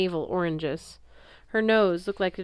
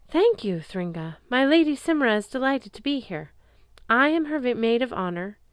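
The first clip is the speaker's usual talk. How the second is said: raised, altered, higher-than-usual voice; 5 semitones higher than usual. Sam curtsies and introduces her lady to Thringa, in a higher-pitched tone. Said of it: "She spoke in a higher pitched tone than usual".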